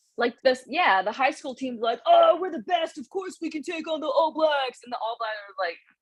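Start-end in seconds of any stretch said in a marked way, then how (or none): 2.1-4.8 fake New Jersey accent, pitched up. Comparing a high school team to the All Blacks, the speaker voices the team in a put-on New Jersey accent. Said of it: "did you just do a New Jersey accent?".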